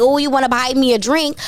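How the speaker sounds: normal talking voice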